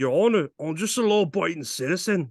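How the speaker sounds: Irish accent impression. Quoting a line from a movie as an impression: Irishman impression. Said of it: "my impression of an Irishman".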